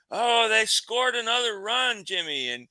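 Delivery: acted, very high, loud hollering yell. Telling about a man who yells ball game scores out to everyone, imitating someone yelling. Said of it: "And he's yelling".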